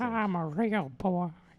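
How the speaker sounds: put-on creepy old man voice, high and slow. Repeating a joke line to the other speaker: creepy old man voice. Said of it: "sounds like old man popsicle boy".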